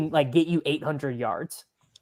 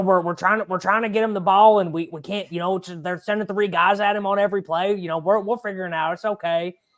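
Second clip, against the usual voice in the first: put-on voice, pitched higher and fast. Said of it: "Pete's got the best impression of you".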